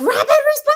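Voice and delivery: frantic, panicked, very high-pitched shout. Recalling calling over the intercom when alarms went off, retelling a panicked shout. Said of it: "I was freaking out".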